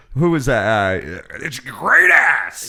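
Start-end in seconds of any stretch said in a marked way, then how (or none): 1.3-2.6 screaming, pitched higher and louder. Retelling what someone screamed: imitating someone screaming. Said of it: "So he was screaming like".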